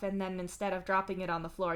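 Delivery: ordinary delivery, nothing marked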